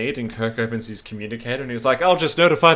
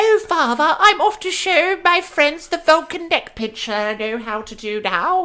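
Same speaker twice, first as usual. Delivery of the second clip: mocking cartoon child voice, pitched higher; 3 dB louder than usual. Mocking the child voice acting in the episode: imitating child Vulcan voice acting. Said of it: "it's that child voice acting".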